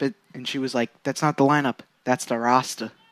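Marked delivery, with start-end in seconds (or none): 1.0-2.9 speaking in a put-on Boston accent. Retelling what a woman said about a team's roster; boston accent. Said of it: "with the Boston accent".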